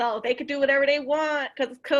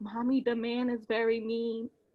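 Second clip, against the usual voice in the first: slow, hushed, secretive half-whisper; 3 semitones lower, 8 dB quieter than usual. Retelling what her child said up close: imitating a child half-whispering. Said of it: "And she whispered it".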